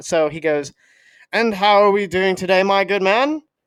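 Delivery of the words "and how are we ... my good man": put-on, fake British accent. Retelling how a drive-thru worker greets customers: imitating a fake british accent. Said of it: "This dude is not British".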